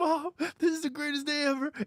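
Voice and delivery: acted, choked-up tearful gush, high crying voice. Describing a favorite funny movie scene: imitating a crying character. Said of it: "he's crying. He's like".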